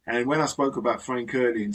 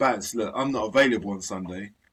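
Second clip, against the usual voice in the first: usual speaking voice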